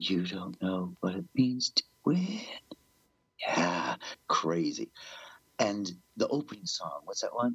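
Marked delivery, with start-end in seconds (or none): 0.0-2.4 mock, put-on whisper. Speaker recalls a live version where he whispers on stage, retelling a whispered line. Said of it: "that's the one where he whispers".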